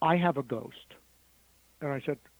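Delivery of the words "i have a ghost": subdued, understated, gently spoken, low-key. Retelling what a woman from the flight said: imitating someone speaking very quietly. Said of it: "she said very quietly".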